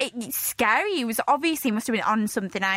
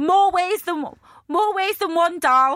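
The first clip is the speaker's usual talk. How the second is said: put-on Essex accent, much higher and louder; 6 semitones higher, 6 dB louder than usual. Joining in imitating a man from the story, speak in an Essex accent. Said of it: "Actually, it's an Essex accent".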